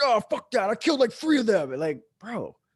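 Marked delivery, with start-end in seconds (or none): 0.0-1.7 put-on, very high, shrill, loud angry voice. Retelling how a paintball player reacted when told he was dead: imitating an angry protest. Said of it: "he'd get really pissed off".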